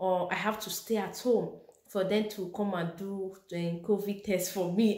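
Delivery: ordinary delivery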